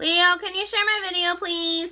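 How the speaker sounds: extremely nasal, exaggerated voice. Calling to her husband upstairs during a makeup video; nasaliest voice ever. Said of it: "She says with the nasaliest voice ever".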